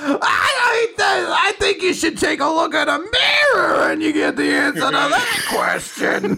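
very high, shouty, loud-mouthed obnoxious comic voice. Retelling a character's mirror insult to another speaker: imitating an obnoxious stand-up comedian. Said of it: "like the most obnoxious stand-up comedian".

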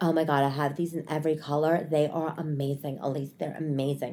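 soft, put-on male voice.

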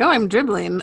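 usual speaking voice

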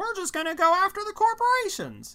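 very high, loud character voice.

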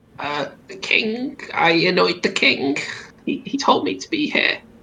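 high cartoonish creature voice. A sealed-in boggart answers why it is locked in here, Terry Jones impression boggart voice. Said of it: "there's a boggart. / Boggart's not gonna have her husband coming home tonight. / I'm just about doing like fucking Terry Jones from Monty Python".

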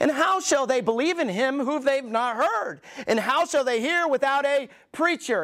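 mocking sarcastic tone. Reading a Bible verse aloud, sarcastic reading of a quote. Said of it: "And here's the sarcasm".

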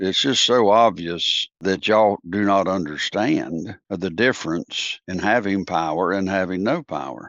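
usual speaking voice

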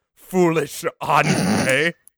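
put-on intense, angry man voice with German accent. Answering a call to summon a character: Tomatar voice, intense angry German. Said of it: "a very intense, angry German man".

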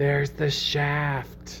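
hushed, soft, under-the-breath whisper. Playing Debbie leaning over to Beth: whispering. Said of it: "Debbie leans over to Beth and whispers".

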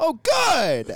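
put-on shrill, very loud, high-pitched kid screaming. Retelling a kid's outburst during prayer time: imitating Cole screaming. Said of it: "screams at the top of his lung".

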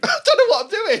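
high, slow, helpless, giggly laughing voice.

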